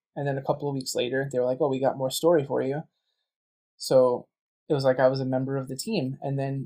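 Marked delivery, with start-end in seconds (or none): none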